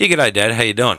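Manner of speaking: plain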